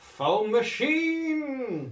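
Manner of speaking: very high, panicked yell, artificially stretched. Describing a character jumping out of a chair: panicked shout. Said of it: "I panicked".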